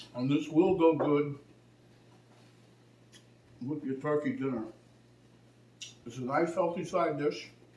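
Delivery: talking with mouth full of food, chewing. Recipe video host tasting the dish for viewers, talking with mouth full. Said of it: "I shouldn't talk on my mouth full".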